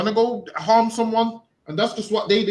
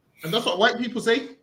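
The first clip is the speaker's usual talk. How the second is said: plain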